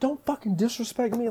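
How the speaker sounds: play-acted very high, furious, enraged voice. Retelling what they said to the stepmom: imitating own angry reply. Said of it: "I got so angry at her".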